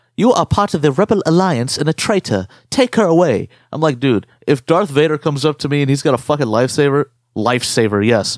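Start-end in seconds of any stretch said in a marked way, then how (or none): 0.2-3.5 put-on tense German accent. Showing how the original Darth Vader sounds, do him as an uptight German dude. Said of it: "sounds like some fucking uptight German dude".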